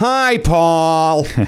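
high, drawn-out name. Retelling a greeting when someone came over, in a Penny Marshall voice. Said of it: "in that Penny Marshall voice".

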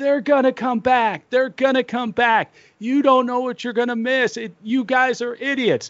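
mock, very high-pitched yelling in a kid's voice. Recalling being seven and standing on a seat, retelling yelling to the crowd. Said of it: "just yelling to the crowd".

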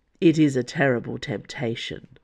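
ordinary delivery

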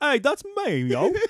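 put-on very high, slow, drawn-out Australian accent. Imagining a listener hearing the podcast, put-on australian accent. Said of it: "Why is everybody Australian?".

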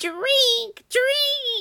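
very high, shrill, loud scream. In a rage, she drives her cows to the river, screaming. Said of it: "she screamed at them".

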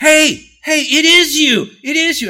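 very loud, very high, drawn-out shout. Retelling how a guy at the back of the room called out: imitating someone yelling. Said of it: "a guy yelled out".

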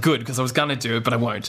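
ordinary talk

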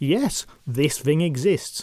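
ordinary delivery

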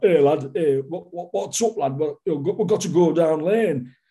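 put-on heavy, broad Yorkshire accent, laid on thick. Quoting a cheesy nuclear attack drama seen as a kid, in a thick yorkshire accent. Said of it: "the Yorkshire accent is too thick".

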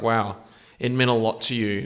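ordinary talk

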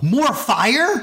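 high, eager, hopeful yell, acted out. Retelling a moment from the show: imitating a yell. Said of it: "And I yell".

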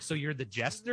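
plain

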